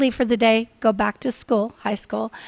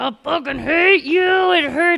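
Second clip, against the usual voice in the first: put-on high, furious outburst, enraged woman's voice; 6 semitones higher, 4 dB louder than usual. Retelling what a mother in labor yelled at her husband: imitating a furious laboring mother. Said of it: "talking like this".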